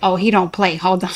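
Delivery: ordinary delivery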